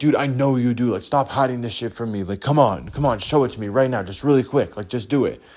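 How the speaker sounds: acted annoying, aggressive, pushy, insistent nagging voice. Retelling a guy pushing to be shown pictures: imitating someone aggressive and annoying. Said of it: "aggressive and annoying about it".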